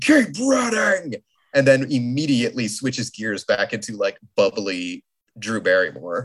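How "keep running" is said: very high, furious, angry cry. Recounting a role, acting out the character's outburst, imitating Drew Barrymore very angry. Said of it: "very, very angry".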